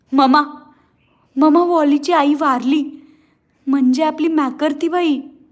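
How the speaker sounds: frightened and flustered. Narrator reads a boy running in to his mother with news, frightened and flustered. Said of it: "घाबऱ्या गुबऱ्या स्वरात म्हणाला".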